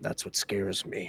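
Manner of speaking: very soft, breathy near-whisper. Voicing a character answering a friend's encouragement: whispered breath. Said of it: "kinda in a whispered breath".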